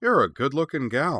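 cheery voice. A woman who has just greeted Cora speaks to her again: cheerful. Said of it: "said the woman cheerfully".

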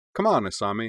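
plain reading voice

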